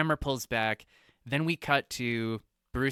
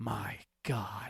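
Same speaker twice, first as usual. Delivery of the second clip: put-on whisper, quieter; 2 semitones lower, 6 dB quieter than usual. Retelling a film scene where Alfred recoils: imitating Alfred whispering. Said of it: "he whispers".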